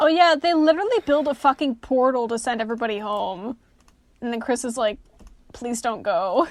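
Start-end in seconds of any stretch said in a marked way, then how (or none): 5.5-6.5 put-on crying, tearful voice. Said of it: "grabs onto him and starts crying and screaming".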